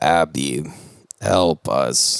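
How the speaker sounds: voice like an electronic talking spelling toy. Retelling a movie scene where the toy speaks: speak and spell voice. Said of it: "in the speak and spell voice".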